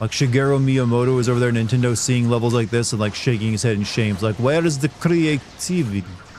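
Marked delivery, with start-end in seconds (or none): 4.4-6.2 put-on very slow, thick Transylvanian accent. Imagining a game designer judging sewer levels, as Shigeru Miyamoto in a Transylvanian accent. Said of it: "gave Shigeru Miyamoto like a very like Transylvanian accent".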